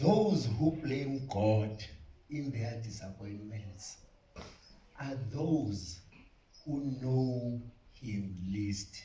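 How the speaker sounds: very slow, deliberate, every word drawn out. Speaker repeating a point to the audience: very slow. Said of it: "I will say it very, very slowly".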